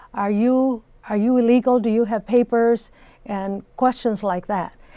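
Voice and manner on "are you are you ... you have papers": play-acted loud, in-your-face shouting. Recounting a man screaming questions in another man's face: imitating a man yelling. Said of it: "yelling at him".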